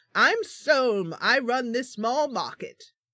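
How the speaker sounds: loose, rough-and-ready put-on British accent. Playing a small-market owner introducing themselves, Solm in put-on British accent. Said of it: "I'm doing a kind of Jamaican, I mean, Jamaican, not Jamaican, uh, British accent".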